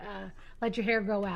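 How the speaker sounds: ordinary talk, nothing marked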